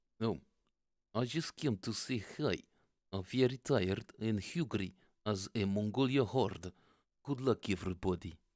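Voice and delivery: loud, put-on Russian accent. Jokingly reconstructing how Zakhar would greet everyone: Zakhar's Russian accent. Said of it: "He does have a lovely Russian accent".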